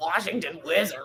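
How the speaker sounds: mocking snide delivery. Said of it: "You understand tone".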